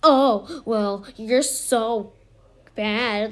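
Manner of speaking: mocking, very slow, drawn-out taunting. A speaker recounts what another person said to them, mimicking a taunt. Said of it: "the way she said it was, like, taunting".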